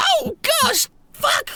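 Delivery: very high startled exclamation. Narrating an arrow smashing through a window, voicing a startled noblin. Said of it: "you hear a, a noblin go".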